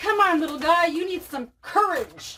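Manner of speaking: storybook lion voice. Retell what you kept telling a scared, whimpering little puppy, in a Cowardly Lion voice. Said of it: "like in the voice of the Cowardly Lion from The Wizard of Oz".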